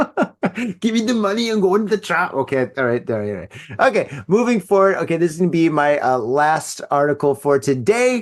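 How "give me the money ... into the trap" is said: high-pitched, fast, mock German accent. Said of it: "that's terrible".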